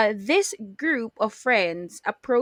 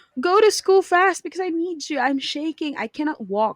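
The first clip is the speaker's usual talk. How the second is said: play-acted urgent, high-pitched begging; 6 semitones higher than usual. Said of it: "rushing them".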